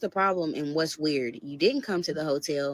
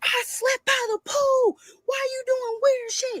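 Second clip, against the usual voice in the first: imitated scream, higher; 4 dB louder than usual. Retelling his answer about the pool: imitating someone screaming.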